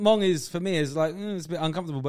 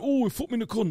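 put-on northern English woman's accent; 5 semitones higher than usual. Describing what he likes to hear from a woman, in a northern English woman's accent. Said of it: "I like a northern accent on a bird".

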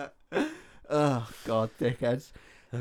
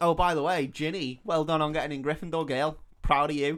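normal talking voice

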